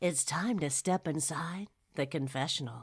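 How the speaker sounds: low, sultry, sexy put-on voice. Introducing the next segment after being asked: put-on sexy intro voice. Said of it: "can you get the sexy voice on".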